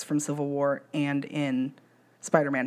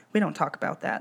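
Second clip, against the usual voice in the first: ordinary delivery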